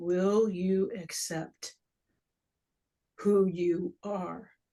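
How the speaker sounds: put-on solemn, grave voice. Recounting a voice heard during an experience of awareness, retelling a solemn voice. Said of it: "it was kind of a solemn voice".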